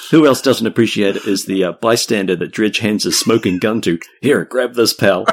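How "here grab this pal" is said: put-on American accent. Narrating a story, voicing a character handing a bystander a gun, in Dredger's American accent. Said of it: "I'm doing an American accent for Dredger".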